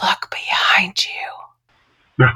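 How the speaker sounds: barely audible, creepy, eerie scary whisper. A nurse retells what a patient whispered while she placed his iv: a scary whisper. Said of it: "in the whisperest, most scary voice".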